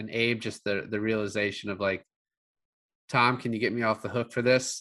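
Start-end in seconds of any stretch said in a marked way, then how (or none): 3.1-4.8 mock matter-of-fact delivery. Recapping a scene where a character asks tom, imitating a matter-of-fact delivery. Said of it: "he says it so matter-of-factly".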